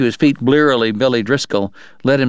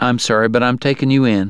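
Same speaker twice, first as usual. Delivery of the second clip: plain reading voice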